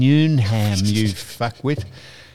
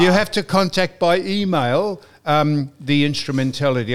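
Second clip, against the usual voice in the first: ordinary talk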